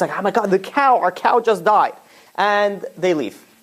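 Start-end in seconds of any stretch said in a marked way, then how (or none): 0.2-1.9 put-on scream kept mild and restrained. Retelling a story in which an old man finds his cow dead: imitating someone screaming. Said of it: "the old man comes in screaming".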